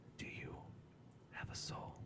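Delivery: hushed, soft whisper, very close-up. Playing the patron lady whispering questions into your ear, whispering. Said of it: "she whispers in your ear".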